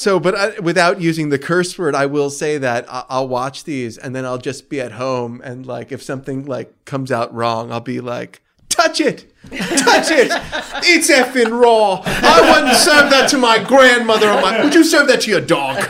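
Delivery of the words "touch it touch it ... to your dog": terrible shrill screaming rant, high and overdone. Describing reacting at home when food comes out wrong, terrible Gordon Ramsay impression. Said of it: "a terrible Gordon Ramsay impression".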